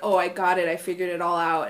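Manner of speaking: usual speaking voice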